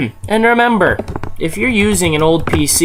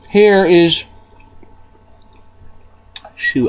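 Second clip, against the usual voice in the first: mouth full, much slower. Searching online for an old computer while still eating an apple: talking with mouth full. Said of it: "I'm still eating my apple".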